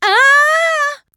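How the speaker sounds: stretched, very high, loud, drawn-out shriek. Trixie, lifting her hoof to look at it closer, screams. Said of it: "Schrie Trixie".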